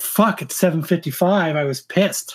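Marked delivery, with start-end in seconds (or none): none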